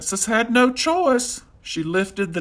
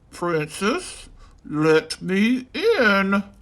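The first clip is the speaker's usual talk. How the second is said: croaking, croaky frog voice. Narrating a fairy tale, the frog calls at the princess's door in a croaky frog voice. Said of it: "called the croaky voice".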